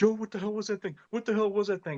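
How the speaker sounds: very high, freaked-out, frantic screaming. Retelling a friend screaming from the front seat: imitating a friend screaming. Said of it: "he's screaming at me".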